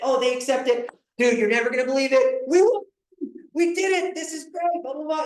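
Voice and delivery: put-on high, excited, gushing, overjoyed voice. Retelling telling a buyer the offer was accepted: imitating excited announcement. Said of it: "It's this exciting thing".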